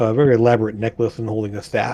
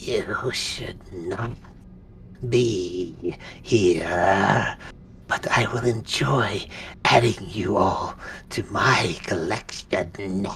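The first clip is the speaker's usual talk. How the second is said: raspy voice, lower, quieter; 3 semitones lower, 6 dB quieter than usual. Speaker voicing a character who addresses the group, in a raspy voice. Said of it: "there's a raspy voice that sort of like comes us out there".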